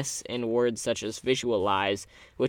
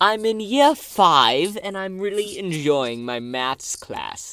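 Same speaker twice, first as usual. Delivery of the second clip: higher, slow mock British schoolkid voice. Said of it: "If you talk like that".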